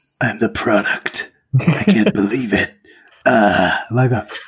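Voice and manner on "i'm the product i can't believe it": gritty, rasping, gravelly voice. Imagining everyone turning into robots, some guy going, gravelly voice. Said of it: "Some guy with a gravelly voice going".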